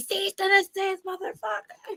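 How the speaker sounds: put-on, high-pitched scream at the top of the voice. Retelling yelling at the TV, imitating own screaming. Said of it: "I'm screaming, like, literally".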